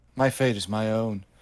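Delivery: normal talking voice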